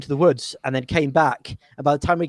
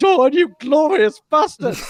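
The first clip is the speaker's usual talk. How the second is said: mock, very high, cracking scream that breaks; 12 semitones higher, 5 dB louder than usual. Retelling a battle moment when an ally raised his spear and screamed: retelling a cracking scream. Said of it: "screamed in a glorious voice, in a, in a cracking voice".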